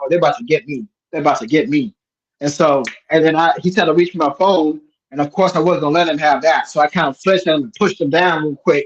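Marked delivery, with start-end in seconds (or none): none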